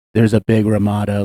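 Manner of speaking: very deep, low, hushed, quiet put-on voice. Retelling what a woman on social media said: imitating a woman from social media. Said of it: "I don't know why I'm doing this voice".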